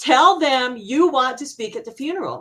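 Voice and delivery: bossy, insistent, shouted. The speaker retells what a woman yelled at them about the funeral: retelling a yell. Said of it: "she starts yelling at me".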